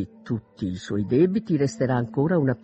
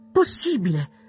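high, sudden, astonished exclamation; 6 semitones higher than usual. Narrator reads Elizabeth reacting after finishing a letter, exclaiming. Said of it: "esclamò Elizabeth".

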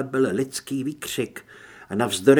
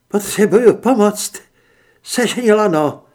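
high, loud, despairing, desperate voice; 7 semitones higher, 8 dB louder than usual. Call for help from inside a deep hole, in a desperate voice. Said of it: "Z jejího hlasu čišelo zoufalství".

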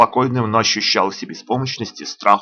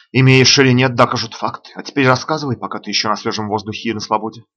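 ordinary delivery

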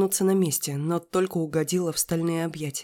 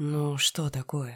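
tempting, seductive, snake-like half-whisper; 3 semitones lower, 4 dB quieter than usual. Ruslan, moving closer to the narrator, speaks to her; tempting serpent half-whisper. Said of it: "Голосом змеи-искусителя прошептал".

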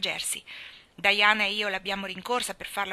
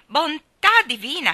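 very loud, high, jittery nervous exclamation; 6 semitones higher, 9 dB louder than usual. A man responds to a girl's confession: nervous exclamation. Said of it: "Esclamò il signor Harrison nervosamente".

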